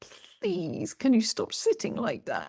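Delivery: soft high-pitched whispering. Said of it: "is the fascia whispering at you".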